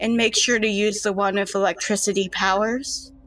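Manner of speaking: excitement easing down into a calm, mellow delivery. Retelling what the creepy girls said as they leave: imitating a soft mellow voice. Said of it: "their excited voices kind of mellow out".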